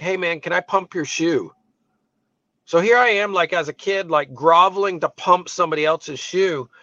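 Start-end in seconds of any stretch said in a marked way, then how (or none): 0.0-1.5 whispering, much quieter. Speaker retelling asking a classmate as a kid, whispering. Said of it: "just like whispering to him".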